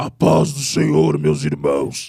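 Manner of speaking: thundering, very low, booming preacher voice. Speaker imitates a preacher stepping up to the microphone: booming preacher voice. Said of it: "parece que desceu o trovão nele".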